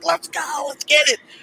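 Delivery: very high-pitched, drawn-out yell. Retelling yelling at the tv while watching wrestling as a kid: retelling own yelling at tv. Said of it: "I was yelling at my T V".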